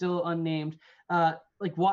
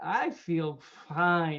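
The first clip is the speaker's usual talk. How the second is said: put-on drunk-sounding voice. Answering the question of how Pete feels: imitating drunk Pete. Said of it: "that was a really good impersonation of Pete".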